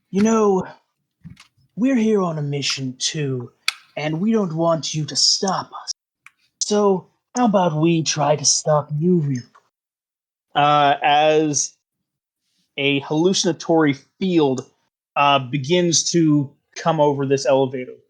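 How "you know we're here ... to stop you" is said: hushed stage whisper. Voicing cultists who threaten the party: hushed half-whispered voices. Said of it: "they say in hushed, whispered voices".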